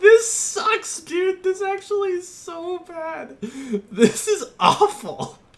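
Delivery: giggling through drawn-out words, very high and loud. Reacting to a car design being made, laughing while talking. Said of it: "But I can't stop laughing".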